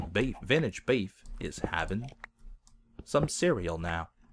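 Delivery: narrator voice, deliberately terrible. Imagining a narrator describing breakfast: terrible Morgan Freeman impression. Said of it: "my terrible Morgan Freeman impression".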